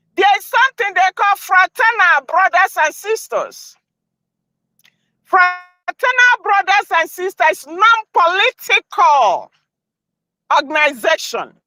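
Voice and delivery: speaking loudly. Talking to viewers while driving so they can hear: yelling. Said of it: "I'm yelling because it's like".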